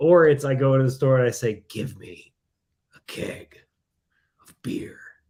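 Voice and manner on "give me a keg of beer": whispered slowly and deliberately. Quoting a movie line about buying beer: bad Teen Wolf impersonation. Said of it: "my impersonation is bad".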